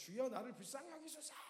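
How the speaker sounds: play-acted, high, desperate, earnest pleading cry. Retelling how two blind men cried out to Jesus: imitating a desperate shout. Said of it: "막 소리를 지르면서".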